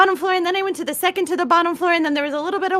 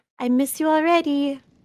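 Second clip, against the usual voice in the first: quiet, soft half-whisper under the breath; 3 semitones lower, 3 dB quieter than usual. Voicing a character speaking to the ground where something vanished: quiet half-whisper. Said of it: "just quietly whispers".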